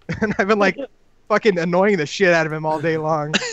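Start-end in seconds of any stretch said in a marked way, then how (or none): none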